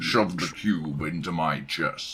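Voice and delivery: very deep, low character voice. Performing a requested line in an Optimus Prime voice. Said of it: "can you use that voice to say".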